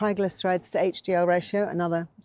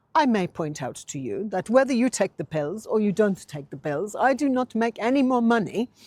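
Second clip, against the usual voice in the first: acted, deeply offended, indignant and affronted voice; 4 semitones higher, 3 dB louder than usual. Retelling what a specialist said back: imitating an indignant voice. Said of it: "he said in the most indignant voice".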